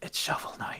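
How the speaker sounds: breathy, barely voiced, very quiet whisper. Confessing the next game of shame on a podcast: whispering. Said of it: "I'm I'm gonna whisper it".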